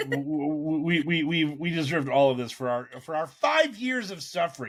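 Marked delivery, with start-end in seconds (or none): 1.4-4.7 thick, heavy, ironic sarcasm, laid on thick. Praising the team's hard work in dark times: dripping sarcasm. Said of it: "doesn't sense my dripping sarcasm".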